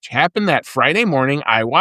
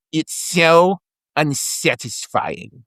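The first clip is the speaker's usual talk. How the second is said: coaxing, goading, baiting character voice. Giving a race headline, imitating a movie poker villain: Teddy KGB voice. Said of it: "I'm going to try to do my, uh, impression here".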